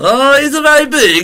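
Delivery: put-on high Eastern European accent. Improvising about a big dog, told to talk as Borat; Borat voice. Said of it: "continue this as if you're all Borat".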